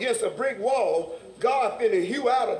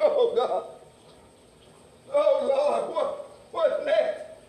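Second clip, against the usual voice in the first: put-on tearful cry, higher; 4 semitones higher than usual. Retelling how the man of God cried to God: imitating someone crying out. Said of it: "it had the man of God crying".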